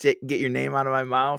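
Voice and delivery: ordinary talk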